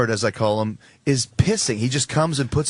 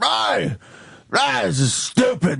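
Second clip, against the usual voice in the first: mock drunk belligerent man voice, much higher, slower; 6 semitones higher than usual. Telling of a drunk businessman on a red-eye flight, imitating a drunk belligerent man. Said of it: "He's just fucking loaded, and he's belligerent".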